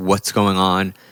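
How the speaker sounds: put-on breathless, nervous, out-of-breath voice. Retelling a worker's nervous phone answer: imitating someone out of breath and nervous. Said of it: "you'd hear that in their voice, out of breath, super nervous".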